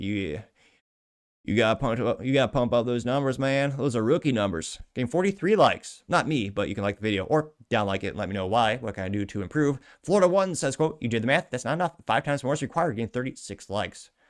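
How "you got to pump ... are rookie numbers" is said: put-on smug, obnoxious, drawling Austin accent. Quoting a line from the movie for a viewer comment, Matthew McConaughey voice. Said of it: "Gotta get that accent like a douchebag from Austin".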